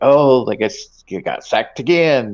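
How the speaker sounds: mock smug teasing. Retelling his wife giving the play-by-play, mimicking her rub-it-in inflection. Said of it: "the inflection that she puts on her voice".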